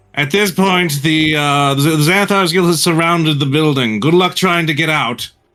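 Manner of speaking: calling out in borrowed voice. A player's character shouts out during a tabletop game, shouting in a pursuer's voice. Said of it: "he's just going to like shout out".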